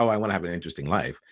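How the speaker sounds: quick, casual, offhand throwaway delivery.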